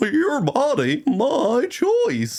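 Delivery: very high cartoon dog voice, going way up and swooping. Retelling a line he blurted out, done in the Goofy voice. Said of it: "the Goofy voice be enough".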